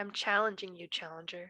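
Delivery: whispering. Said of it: "He's whispering it".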